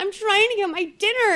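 outraged rant, throwing a fit. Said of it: "starts to throw this fit".

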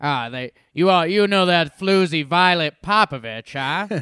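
old-timey, old-fashioned put-on character voice. Prompted by another speaker, saying a woman's name in an old-timey voice. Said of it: "how could you not say the name Violet Popovich in an old-timey voice?".

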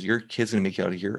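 plain

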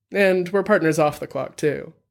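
plain reading voice

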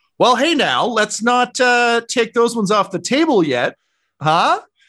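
mysterious voice, high-pitched and loud.

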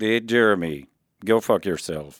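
put-on robotic speech-synthesizer voice. Doing impressions of celebrities who died this year: Stephen Hawking voice. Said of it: "we know you got Stephen Hawking".

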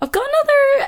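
voice jumping up very high in pitch. A podcast host thanking listeners, speaking in a high-pitched voice. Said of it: "why my voice just goes so high-pitched?".

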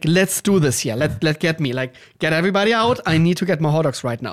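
overexcited, too-excited, eager, can't-wait tone. Retelling arriving at a place that has hot dogs: retelling own overexcited words. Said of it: "I was almost, like, too excited".

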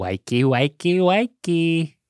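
put-on Australian accent. Retelling the intercom announcer on a tour in australia: australian accent. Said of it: "he was an Aussie".

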